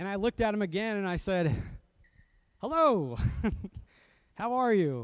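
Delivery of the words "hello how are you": slow, sing-song friendly pastor voice. Retelling greeting a man who wouldn't answer, in his best friendly pastor voice. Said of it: "in my best friendly pastor voice".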